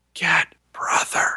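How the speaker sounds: forced, pushed-out, breathy whisper. Retelling a voice heard right up against the microphone: imitating a forced whisper. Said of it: "a forced whisper".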